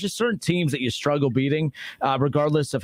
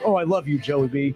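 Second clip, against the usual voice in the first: mock, put-on gushing fan voice. Mocking a caller who gushes over Joey B: imitating Jake gushing. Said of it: "Jake's like".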